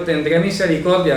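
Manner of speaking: ordinary delivery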